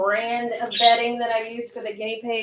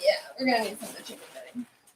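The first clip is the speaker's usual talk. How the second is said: rattled off very fast. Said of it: "I'm speaking very fast".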